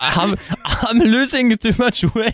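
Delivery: put-on weeping cartoon voice. Imagining a kidnapped prince denied chocolate, weeping in a hostage video, Uter voice, fake weeping. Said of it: "weeping in some hostage video going".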